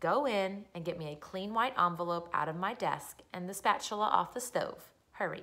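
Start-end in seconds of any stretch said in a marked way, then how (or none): none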